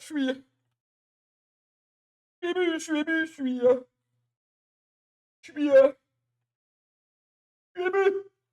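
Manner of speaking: mock tearful, choked-up voice, very high and slow. Speaker retelling a man moved before a transfer, imitating someone choked up. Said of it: "il y a des larmes, il y a des vraies larmes".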